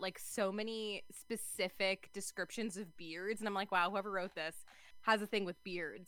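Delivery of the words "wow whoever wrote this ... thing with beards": usual speaking voice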